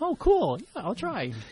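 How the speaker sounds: very high, breezy, offhand fake enthusiasm. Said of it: "And I'm like".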